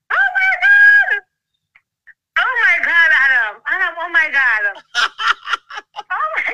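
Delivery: excited, animated, swooping exclamatory outburst. Caller reacting to hearing of a $1.2 million settlement, animated. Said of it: "You sound more animated".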